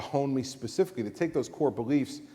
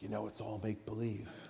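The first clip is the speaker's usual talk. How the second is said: hushed, very soft, confiding, barely-there half-whisper; 12 dB quieter than usual. Retelling a remark half-whispered at a matinee: imitating a half-whisper. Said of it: "leans over to me and whispers in my ear".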